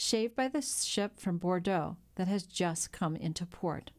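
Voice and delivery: ordinary delivery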